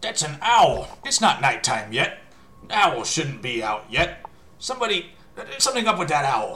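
very loud, high, ringing, echoing goblin voice. Narrating a game scene, the storyteller voices one of the goblins in an echoing goblin voice. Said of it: "you hear an echoing voice of one of the goblins".

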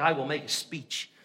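put-on full English accent, very deep and low. Retelling a son's planned speech to his father, in a full english accent. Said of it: "He turns on the full English accent".

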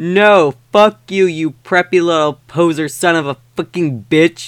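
muttering with disgust. Reading a fan story aloud, a character mutters an insult: disgusted muttering. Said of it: "said under his breast in a disgusted way".

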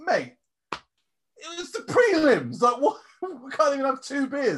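incredulous, high-pitched, slow, drawn-out whining.

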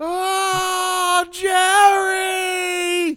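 shrill, booming, very loud high scream, stretched ah. Recalling a favorite movie moment, imitating Danny Glover yelling. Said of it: "the way Danny Glover yells".

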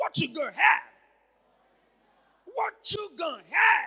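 very loud, high-pitched put-on American accent. Rephrasing a point about the Bible, now in a put-on American accent. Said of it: "Let me speak like an American".

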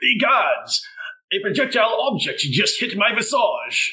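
sudden, shouted, high-pitched outcry. Voicing a character hit by a thrown object: yelling. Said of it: "he just yells".

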